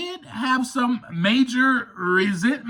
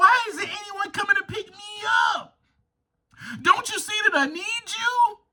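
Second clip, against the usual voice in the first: put-on high, whiny, crying little baby voice; 9 semitones higher than usual. Speaker acts out being stuck in the mind of a baby, little baby voice. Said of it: "a little baby".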